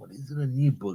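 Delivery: very quiet, hushed half-whisper. Retelling what a man said to him, retelling a half-whisper. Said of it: "he's like whispering in my ear".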